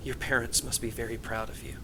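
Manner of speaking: hushed, soft half-whisper. Getting a pat on the back, she speaks so only you can hear: half-whispering. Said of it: "she just whispers where only you can hear".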